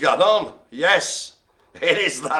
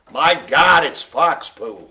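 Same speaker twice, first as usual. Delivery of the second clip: slow, drawn-out put-on American accent. Joking with another speaker, putting on an american accent. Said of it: "saying fox poo in an American accent".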